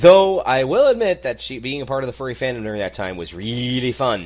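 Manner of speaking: very loud, laid-on-thick sarcasm. Discussing the character Minerva Mink with another speaker, sarcastic. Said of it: "Note the sarcasm in my voice".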